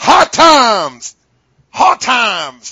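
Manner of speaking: very loud, very slow, high, stretched-out words. Answering a request for everyone's Dusty Rhodes impression, doing a Dusty Rhodes impression. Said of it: "I want to hear everybody's Dusty Rhodes impression".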